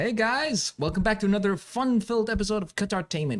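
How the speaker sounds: TV sales-pitch host delivery. Co-host prompts him to say the show intro: infomercial announcer voice. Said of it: "do I sound like a damn infomercial".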